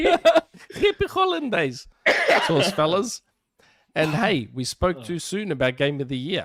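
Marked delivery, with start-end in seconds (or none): 0.0-3.2 put-on very high, sing-song little old Greek lady voice. Reading out a listener's greeting: little old Greek lady voice. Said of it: "That's how little old Greek ladies talk English".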